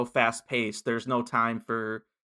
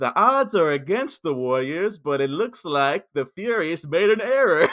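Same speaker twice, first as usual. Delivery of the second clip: raised, pitched-up on-air radio DJ voice; 5 semitones higher, 5 dB louder than usual. Retelling how a character broadcasts messages, the speaker quotes her: radio DJ voice. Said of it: "She's like putting it in a DJ voice".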